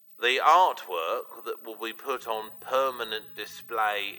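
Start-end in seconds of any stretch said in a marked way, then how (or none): none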